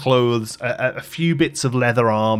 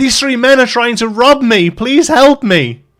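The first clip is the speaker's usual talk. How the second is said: shrill, very high, very loud shouted cry; 12 semitones higher, 9 dB louder than usual. Storyteller voicing a gnome on top of a wagon, shouting. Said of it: "he shouts".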